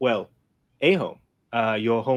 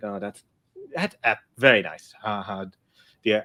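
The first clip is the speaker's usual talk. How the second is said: mock distracted, absent-minded, half-listening tone. Voicing a father reading who is not really paying attention: distracted, not paying attention. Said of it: "He's not really paying attention".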